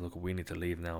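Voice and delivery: ordinary talk, nothing marked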